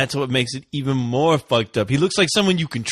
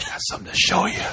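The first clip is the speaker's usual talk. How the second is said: put-on whispered, ominous old man voice; 5 semitones higher, 3 dB quieter than usual. Imitating an old man in the film, whispering: imitating an old man whispering. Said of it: "I love how he whispers".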